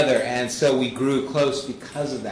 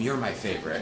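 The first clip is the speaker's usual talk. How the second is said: low, hushed half-whisper; 5 semitones lower, 6 dB quieter than usual. A parent recalls what they told each of their children: half-whispered. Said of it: "I whispered to all of them".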